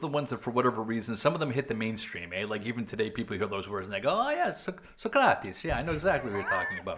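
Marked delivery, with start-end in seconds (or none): 4.1-7.0 amateur swooping put-on Greek accent. Mimicking how people react on hearing famous names, in a greek accent. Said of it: "which is my best greek accent".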